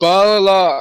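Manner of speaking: loud, high yelled word. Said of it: "And I yell".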